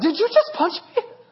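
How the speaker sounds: stunned mock outrage, high, laughing disbelief.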